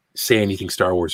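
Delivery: ordinary delivery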